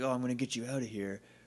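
put-on quiet gentle voice. Retelling how the prince picks up the princess: imitating a quiet, gentle voice. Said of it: "quiet and gentle".

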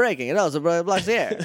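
put-on old-time 1930s radio announcer bulletin delivery. Recapping a show, imitating a character's line, 1930s radio announcer voice. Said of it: "He's like a 1930s radio announcer".

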